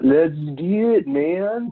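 put-on Californian accent. A podcast host says the show's opener in a put-on Californian accent. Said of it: "that was supposed so to be californian".

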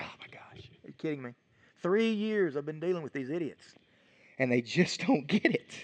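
mock worn-out, fed-up, exasperated disbelief. Retelling the disciples' arguing, acting out an eye roll: imitating eye-rolling exasperation. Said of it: "he kinda rolls his eyes".

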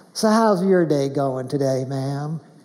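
put-on Texas drawl. Pastor Cheryl greets the hostess, imitating Pastor Cheryl's Texas drawl. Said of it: "channels her Texas charm and drawl".

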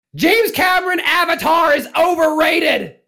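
very high, loud, shrieked defiant scream. Prompted to defiantly hold ground and scream out own meme: screaming out a meme. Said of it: "scream out your own meme".

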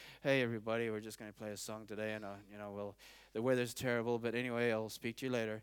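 dull, bored radio dj. A speaker acts out a radio dj greeting morning listeners in a boring, bored dj voice. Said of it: "a DJ who sounds boring".

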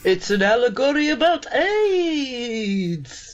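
voice of a movie vampire. Discussing Blackula, offering a reading of the film in a vampire voice. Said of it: "I got to say AIDS in a vampire voice".

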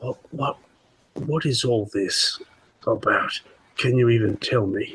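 muttering under breath. A player speaking in character near Bento, muttering under breath. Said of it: "I'm gonna kind of say under my breath".

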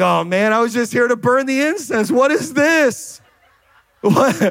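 play-acted put-out, irritated griping. A pastor acts out a man bothered that an angel showed up, imitating an annoyed man. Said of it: "he's more annoyed that an angel showed up".

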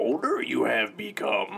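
high, creaky character voice. Reading a birthday card aloud after being asked: Yoda voice. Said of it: "You wanna try it like Yoda?".

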